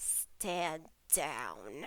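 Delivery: very soft, low, hushed growl. Voicing a character who slashes at her, growling. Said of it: "sort of growls at her".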